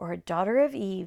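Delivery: ordinary delivery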